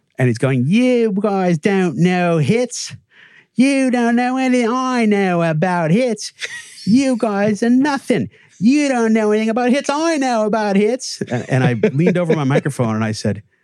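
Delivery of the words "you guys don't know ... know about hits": put-on very high-pitched, thick, heavy Cockney British accent rant. Retelling a man's rant at them on stage, in a thick cockney accent. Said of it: "in a very thick, sort of Cockney style British accent".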